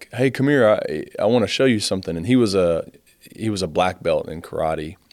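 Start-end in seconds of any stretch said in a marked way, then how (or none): 0.1-2.1 mock chummy, breezy, jovial, friendly tone. Retelling how a stepdad called the speaker over, imitating a jovial tone. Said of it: "almost in a jovial sense".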